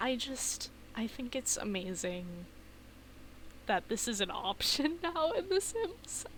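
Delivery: voice cracking. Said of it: "my voice is cracking".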